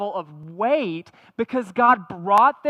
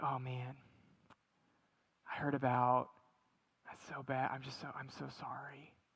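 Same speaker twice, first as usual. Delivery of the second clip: very quiet, lowered, hushed and sympathetic voice; 8 semitones lower, 18 dB quieter than usual. Recalling consoling a man about his church, retelling a lowered compassionate voice. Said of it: "you lower your voice to show your compassion".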